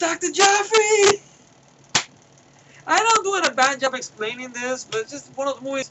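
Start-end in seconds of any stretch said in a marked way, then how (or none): 0.0-1.2 shrill yell, pitched very high and loud. Retelling a movie scene as a character walks out, imitating a yell. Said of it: "he yells".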